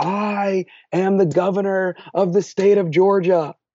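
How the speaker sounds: put-on booming, commanding voice. Recalling overhearing someone through the wall during a heated discussion: retelling a booming voice. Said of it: "this booming voice said".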